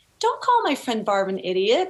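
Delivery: plain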